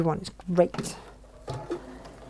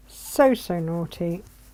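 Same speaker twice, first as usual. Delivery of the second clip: slow, stretched-out so so naughty with rising tune.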